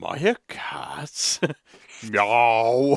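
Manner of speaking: very slow cat voice, every sound stretched out. Talking about Markiplier's vocal range, the speaker does a Markiplier cat voice. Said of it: "It's a fucking Markiplier cat voice".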